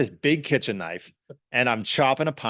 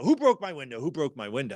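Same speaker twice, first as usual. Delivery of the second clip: imitated angry shouting, higher; 3 semitones higher, 3 dB quieter than usual. Retelling a big man on a bus yelling about his broken window: imitating someone shouting angrily. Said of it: "he's shouting".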